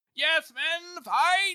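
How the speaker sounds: mock very high, loud, heroic rallying battle cry. Retelling Casca rallying the men on the walls: imitating Casca's heroic rally cry. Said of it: "He's all, like, heroic and shit".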